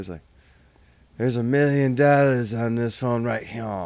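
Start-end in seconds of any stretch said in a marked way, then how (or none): 1.2-3.6 put-on heavy Southern accent, laid on thick. Retelling a movie scene with Steven Seagal: imitating Steven Seagal's Southern accent. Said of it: "a real heavy Southern accent out of nowhere".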